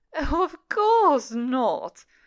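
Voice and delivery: loud, slow speech through laughter. Mother answers the boy who begged to stay home, laughing. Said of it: "laughed Mother".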